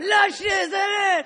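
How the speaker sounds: high, slow, drawn-out catcall yell. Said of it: "they started yelling stuff like".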